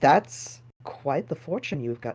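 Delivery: hushed, secretive, soft whisper. Narrating a scene, the speaker voices Matthias leaning down to a kid: Matthias whispering. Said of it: "whispers in its ear".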